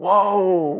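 anguished, pained, sorrowful 'woe'. Explaining a kind of woe, speaker says the word: pained, sorrowful 'woe'. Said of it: "It's more like a pain woe".

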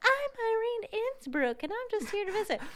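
very high voice an octave up, "I'm" stretched. Retelling how a book character dons a persona: Irene Innsbruck voice, pitched up. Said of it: "pitches her voice up an octave".

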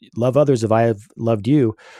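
ordinary delivery

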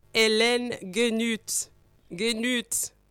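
name given its proper French sound. Saying a guest's name again when asked: French accent. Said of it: "I love your French accent".

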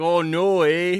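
high, loud put-on Canadian accent. Retelling a drunk guy at a potato chip factory, using a Canadian accent. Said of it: "except he was Canadian".

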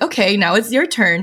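normal talking voice

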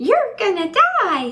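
whiny, very high, squeaky little voice. Retelling what an inner voice said: imitating a whiny little voice. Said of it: "this whiny little voice came up and said".

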